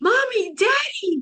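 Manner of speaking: very high, overjoyed, excited calling out. Retelling a dream of seeing parents in a doorway: imitating own excited call. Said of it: "And I was so excited".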